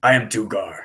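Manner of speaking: deep, low voice with echo. Narrating a scene to another player, voicing Dugar in a deep echoey voice. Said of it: "in that that deep echoey voice".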